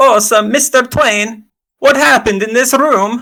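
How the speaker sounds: put-on Italian accent, pitch way up. Playing a small soft-spoken man questioning another character, in Sprig Summerfoot's Italian voice. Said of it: "let me find my Italian voice".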